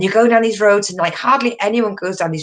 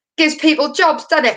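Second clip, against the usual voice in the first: put-on clumsy public-advert announcer girl voice, pitched up; 8 semitones higher than usual. Retelling a late-eighties litter advert with a young girl: bad impersonation of a British PSA. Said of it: "my bad impersonation of a British public service announcement".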